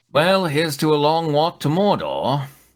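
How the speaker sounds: put-on wise old mentor voice. Voicing Obi-Wan in a group reading as the fellowship departs: Obi-Wan voice. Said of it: "as Obi-Wan remarks".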